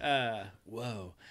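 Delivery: put-on British accent. Starting a devil's advocate argument after being asked for an accent: Keanu British accent. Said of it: "I'm gonna go with the Keanu British accent".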